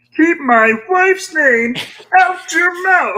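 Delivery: shrill, high, full-blast puppet yell. Performing a line after being asked for a meme: Kermit the Frog yelling. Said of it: "You're gonna have to do the Kermit the Frog yelling".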